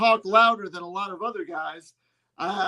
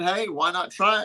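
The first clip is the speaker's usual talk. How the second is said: ordinary talk, nothing marked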